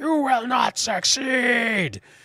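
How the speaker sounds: very high shriek, stretched out slow. Voicing a foe whose trophy just broke: Tito Tauntaun screaming. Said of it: "Tito Tauntaun screams across the chamber".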